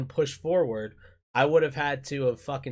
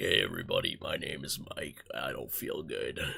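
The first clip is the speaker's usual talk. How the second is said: very low, hushed, creaky, groggy demon voice mumble; 14 semitones lower, 10 dB quieter than usual. Explaining why he skipped last week's stream, replaying how he sounded: imitating own groggy, deep voice. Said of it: "My voice was so groggly and deep".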